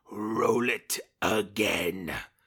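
very loud, bellowing dark emperor voice. Retelling what a man on stage said to a screaming crowd: Palpatine voice. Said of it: "in his best Palpatine voice".

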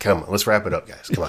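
ordinary talk

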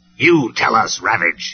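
snapped, snapping tone. Megatron, feeling Ravage is making a fool of him, answers him, snapping. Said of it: "he snapped".

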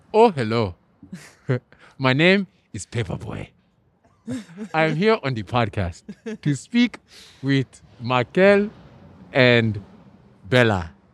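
Nigerian-accented English, put-on and laid on heavily. Answering a request to do a nigerian accent: put-on nigerian accent. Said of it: "Can you do Nigerian?".

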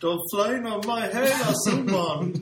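mock shout, laughing, high and loud.

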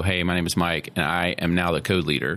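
normal talking voice

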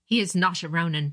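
plain

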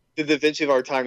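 ordinary delivery

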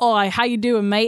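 put-on, friendly Australian accent. Describing how nice Trevor is, imitating Trevor's friendly Australian accent. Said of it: "he's like Australian nice".

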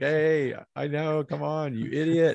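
mock eager know-it-all, high, impatient half-yell. During a guessing game, the speaker acts out Ellie's reaction, imitating Ellie screaming. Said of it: "She's screaming at the top of her lungs".

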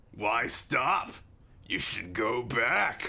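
put-on slow, dragged-out, dark, ominous stoner drawl. Playing Fantasy Seth Rogen, urging two recovering characters to return: Seth Rogen voice. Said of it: "an ominous Seth Rogen laugh".

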